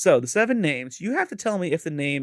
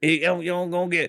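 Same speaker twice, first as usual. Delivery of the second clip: fast mock Midwest accent with twang. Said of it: "'Cause we're in the Midwest, and it's funny".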